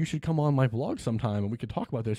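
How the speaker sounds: usual speaking voice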